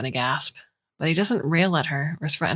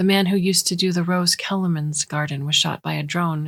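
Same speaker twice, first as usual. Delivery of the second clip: ordinary delivery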